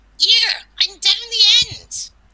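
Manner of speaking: put-on Cornish accent, very loud and high. Recounting a female voice heard from down a haunted corridor, in a loud, clear Cornish accent. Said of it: "in a Cornish accent, really loud".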